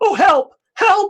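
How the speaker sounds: very high, loud, crying, distraught shout. Narrating an older man fleeing the town, crying and shouting for help. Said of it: "he's crying and he's shouting out".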